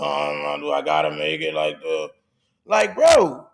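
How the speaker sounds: play-acted, sing-song, grudging, complaining, nasty attitude. Complaining about people who react badly to simple requests, mimicking their nasty attitude. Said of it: "out of nasty fucking attitude".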